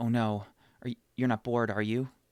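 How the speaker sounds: fretful, desperate delivery. Showing how a joke sounds coming from desperation, in a mock-desperate tone. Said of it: "coming from like desperation".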